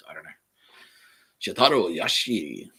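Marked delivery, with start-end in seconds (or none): 1.4-2.6 put-on Japanese accent. Reading names from a news item about japan, in a mock japanese accent. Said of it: "do the Japanese accent when I read".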